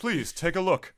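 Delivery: game-show host announcer voice. Teasing a friend for acting like he's announcing a game: imitating a Nintendo Direct presenter. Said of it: "He's in a Nintendo Direct. Like".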